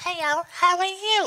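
shrill, loud, full-on cartoon voice. Speaker recalls high-school characters done to make people laugh, doing the Baby Lips character voice. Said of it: "I used to have these characters called Baby Lips".

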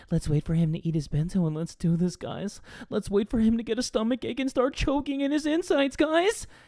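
fake sexy whispery voice. Retelling what he said to viewers while waiting, in a put-on seductive asmr voice. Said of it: "this ain't ASMR".

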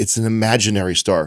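usual speaking voice

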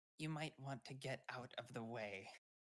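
hushed voice. A game character behind a teammate speaks up during their turn: very quiet. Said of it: "Runa behind you just says very quietly".

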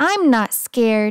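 ordinary delivery

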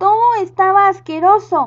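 loud, high, revolted exclamation of disgust. Narrator reads the prince answering whether he liked the meal, exclaiming. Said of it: "Exclamó él".

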